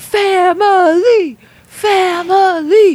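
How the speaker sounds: put-on very high, slow, drawn-out drunken scream. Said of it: "And then starts screaming".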